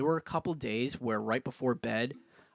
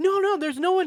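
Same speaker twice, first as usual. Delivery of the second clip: mock hysterical, very high-pitched, loud tearful crying; 7 dB louder than usual. Retelling a dream where crowds tried to break in: imitating own crying. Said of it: "crying in my dream".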